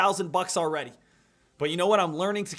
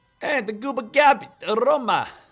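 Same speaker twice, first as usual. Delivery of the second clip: weak put-on Italian accent, higher and louder; 5 semitones higher, 6 dB louder than usual. Calling out a stock on a trading stream: half-hearted Italian accent. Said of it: "was that your best Italian accent?".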